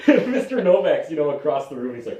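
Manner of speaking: ordinary talk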